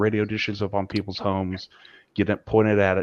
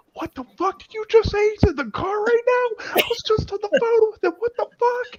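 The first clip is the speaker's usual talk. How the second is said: mock man screaming, pitched way up, raw; 4 dB louder than usual. Retelling a phone call, acting out a man in the background: imitating a man screaming. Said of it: "I hear this man in the background screaming".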